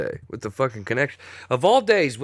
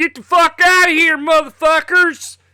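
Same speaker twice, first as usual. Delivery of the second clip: shrill, very high, very loud yell; 9 dB louder than usual. Imitating an owner firing his staff: imitating Jim Crane yelling. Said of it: "what I just did an impression of".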